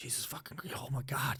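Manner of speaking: breathy, worked-up, agitated whisper. Retelling own reaction while watching climbers: imitating own agitated outburst. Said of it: "my wife could tell I was agitated".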